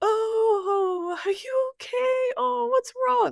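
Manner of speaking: very high, slow, caring, loving motherly voice. Retelling checking on someone who was sleepwalking, in a put-on loving mom voice. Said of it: "put on my mom, loving mom voice".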